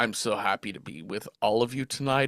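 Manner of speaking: rushed, low, hushed monster voice. Narrating a bit where her mask falls, the speaker talks in monster voice. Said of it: "in monster voice".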